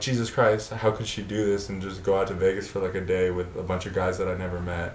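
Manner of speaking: ordinary talk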